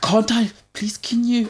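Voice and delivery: very high, drawn-out pleading voice. Imitating a cold girlfriend asking for the hot water bottle: imitating a girlfriend's pleading voice. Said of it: "They do that voice as well".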